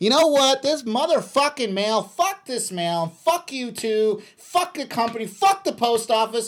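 put-on very high, cursing, furious yelling rant. Speaker acts out an angry person at the house yelling at the mail carrier, imitating angry person yelling. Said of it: "the person was angry about you for something and was just yelling at you".

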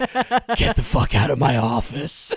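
slow, drawn-out ASMR whisper. Retelling a boss firing an employee, imitating an ASMR whisper. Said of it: "this A S M R".

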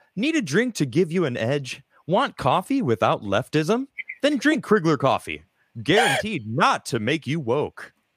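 high-pitched radio commercial announcer voice. Performing a mock coffee commercial for the chat, in announcer voice. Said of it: "so I know to pull out my announcer voice".

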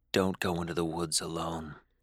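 cold, lifeless, toneless drone, low and hushed. Narrating a story, a voice speaks directly in the narrator's ear, cold, dead monotone voice. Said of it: "cold, dead, monotone voice said directly in my ear".

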